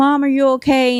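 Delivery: fake crying voice. Telling a story about someone's kids calling their mother on the phone, doing an impression of them crying, imitating crying. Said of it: "however she talks in her drunk, slurring voice".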